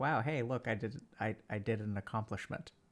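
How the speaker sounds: lightly sarcastic, self-satisfied tone. Imitating Metric's slightly sarcastic way of praising himself: imitating Metric, slightly sarcastic. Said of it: "in his slightly sarcastic way".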